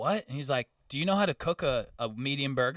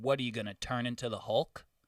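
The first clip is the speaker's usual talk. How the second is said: mock angry, sassy, sarcastic retort; 3 dB quieter than usual. Retelling a retort to a customer about a burger: retelling an angry retort. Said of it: "I was so fucking mad".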